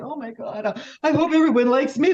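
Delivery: put-on sobbing. Retelling writing an essay about a cousin's funeral: imitating own past sobbing. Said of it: "even I was sobbing, going".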